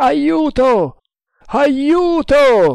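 very high, thundering, booming yell. The snake hunter, clinging to the capsized boat's keel, calls out: thundering shout for help. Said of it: "gridò con voce tonante".

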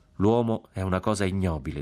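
ordinary talk

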